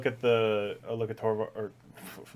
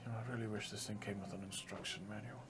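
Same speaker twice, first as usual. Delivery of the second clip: very soft, quiet mutter under the breath; 2 semitones lower, 15 dB quieter than usual. Voicing a character muttering while treating a wound: muttering under breath. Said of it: "Just gonna say under my breath".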